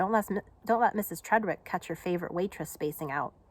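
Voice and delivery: ordinary talk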